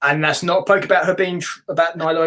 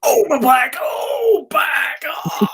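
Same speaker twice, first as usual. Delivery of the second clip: put-on wrestler voice in fake pain, higher pitch; 9 semitones higher than usual. Acting out a wrestler hurting his back, Hulk Hogan impression. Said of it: "helping me do that impression".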